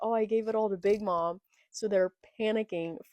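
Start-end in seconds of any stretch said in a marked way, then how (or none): none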